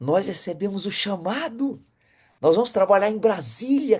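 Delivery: acted joyful delight. Retelling bringing home the news to his wife: retelling own joyful announcement. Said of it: "feliz da vida".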